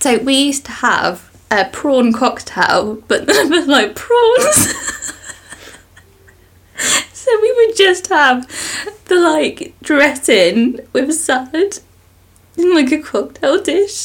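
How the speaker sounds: high, tearful, sobbing crying voice. Sharing a family food memory with the other speaker, sounding like crying. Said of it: "sounds like literally you're crying your eyes out".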